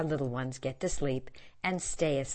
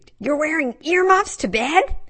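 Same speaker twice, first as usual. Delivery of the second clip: loud, very high shriek; 13 semitones higher, 13 dB louder than usual. Jen to her pajama-clad husband at bedtime, shrieking. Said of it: "Jen shrieked".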